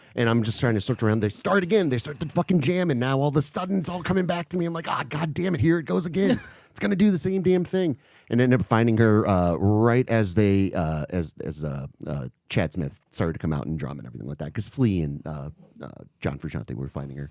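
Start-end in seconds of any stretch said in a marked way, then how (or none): 4.9-8.0 exasperated, panicked, very high-pitched voice. Retelling a concert where the band restarts the jam, reenacting freaking out. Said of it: "so now I'm freaking out again".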